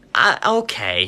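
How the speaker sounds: put-on patronizing, condescending, talking-down tone. Retelling a customer's reluctant answer about buying a light: imitating a condescending reply. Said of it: "in the condescending voice".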